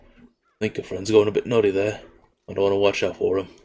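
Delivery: hushed, confiding half-whisper. Voicing a character who leans down to speak to Arthas: half-whispering. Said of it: "lean down and whisper to you".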